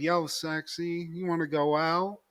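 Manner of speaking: slow, drawn-out, show-off, laid-on delivery. Acting out Roger asking a girl on a date: acting out Roger. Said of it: "And he's like".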